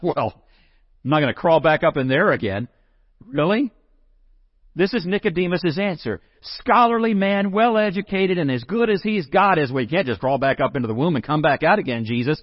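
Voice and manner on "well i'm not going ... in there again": wisecracking, know-it-all, smart-alecky, sarcastic tone. Speaker imagines Nicodemus answering Jesus, smart-alecky Nicodemus. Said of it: "or is he smart alecky?".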